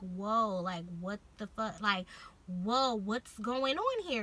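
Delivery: acted shocked voice, slowed. Retelling being stopped by loss prevention, acting out being shocked. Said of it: "and I'm shocked".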